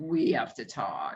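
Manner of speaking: very low, ominous, slow and drawn-out scary tone. Retelling how a woman repeated what she told her ex, mock-scary tone. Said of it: "say it in such a scary way".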